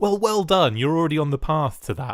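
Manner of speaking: patronising, talking-down, swooping sing-song tone. Speaker mimics how their own remark came across to the listener, mock-patronising. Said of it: "That sounded really patronising, like I was patting you on the head".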